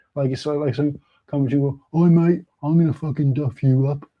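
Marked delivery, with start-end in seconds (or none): 1.3-4.0 put-on mild, unthreatening, gentle Brummie accent. Acting out someone making a threat, in a soft Birmingham accent. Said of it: "he said it in a Birmingham accent".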